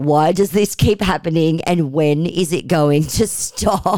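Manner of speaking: plain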